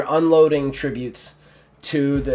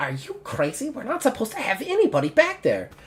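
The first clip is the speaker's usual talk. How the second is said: high little goblin voice. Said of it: "he's like a little goblin".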